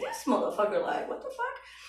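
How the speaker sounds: high, laughing, incredulous disbelief.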